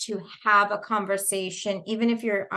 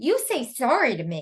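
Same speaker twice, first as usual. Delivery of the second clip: put-on sassy little girl voice, higher; 4 semitones higher than usual. Retelling what a little girl at circle said: imitating a sassy little girl. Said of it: "she was such a little sassy".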